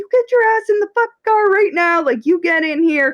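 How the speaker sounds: very high, shrill, furious screaming, acted out. Retelling a mother screaming at a fifteen-year-old girl, imitating a mother screaming. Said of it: "she's screaming at her".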